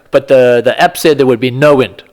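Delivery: ordinary talk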